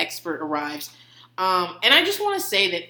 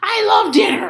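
put-on gruff monster voice; 12 semitones higher, 6 dB louder than usual. Imitating a three-year-old son at dinnertime: Cookie Monster voice. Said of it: "what he sounds like is fucking Cookie Monster".

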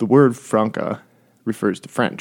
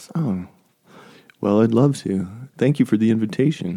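put-on public radio voice. [name], invited by a co-host to share his topic, answers in a mock NPR voice. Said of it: "I was trying to go NPR".

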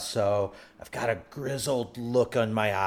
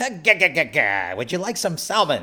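grizzled cartoon sailor voice, pitched higher; 6 semitones higher, 7 dB louder than usual. Getting into character for a fresh-catch role-play, in a Popeye voice. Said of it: "was that Popeye?".

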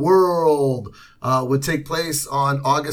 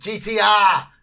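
put-on mocking, teasing Boston accent, pitched up; 5 semitones higher than usual. Joking about a radio station's call letters: mock Boston accent. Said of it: "make fun of the accent".

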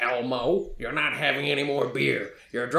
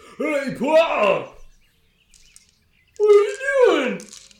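put-on bumbling, drunken, very high-pitched, drawn-out yell; 14 semitones higher, 7 dB louder than usual. Game narrator voices a huge drunk man bursting out to his Pa, drunk man yelling. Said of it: "he just bursts out and he yells".

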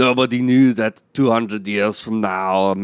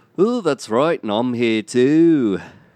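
put-on Liverpool accent, higher pitch; 3 semitones higher than usual. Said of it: "that's [name]".

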